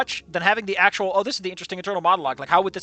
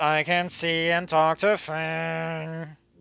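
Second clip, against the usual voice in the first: put-on very slow, flat, bored deadpan drone. Reading a game line aloud as the character: most boring voice. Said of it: "and I said in my most boring voice".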